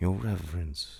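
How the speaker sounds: ordinary delivery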